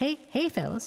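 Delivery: put-on soft innocent boy voice. Trying a Butters voice after another player says it's hard. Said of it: "I don't think I could do a Butters voice".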